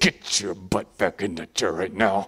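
very low, very quiet, menacing, under the breath. Showing how parents scold kids in public: parent's under-the-breath voice. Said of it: "the under the voice voice".

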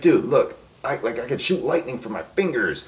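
acted-out angry, fed-up, worked-up outburst. Retelling a movie scene where a character gets all mad: imitating him getting mad. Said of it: "gets all mad and he's like".

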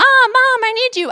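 put-on loud, high-pitched kid voice yelling out.

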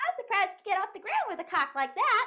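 high-pitched voice. Imagining what a small daughter would say: high-pitched voice. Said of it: "High pitched".

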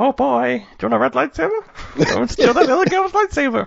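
very high, squeaky, swooping, sing-song cartoon voice. Joking about stealing a kid's lightsaber crystal, doing a Mickey Mouse voice. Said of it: "Like the idea of like Mickey Mouse being like".

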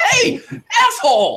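panicked character yell. Player voicing Randy, yelling to get someone's attention: Randy's high-pitched scared yell. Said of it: "he yells a little too, like, high-pitched".

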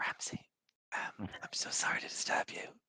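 very quiet, breathy whisper, barely above a breath. Retelling a message sent to a companion called Ramsey: retelling a whisper. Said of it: "I whispered to him".

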